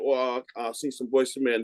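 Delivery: ordinary delivery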